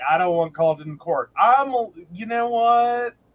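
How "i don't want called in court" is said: ordinary delivery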